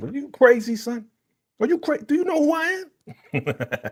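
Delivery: mock New York attitude, swooping and drawn out. Retelling how a character told off the partners: imitating a New York style telling-off. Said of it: "She's from New York".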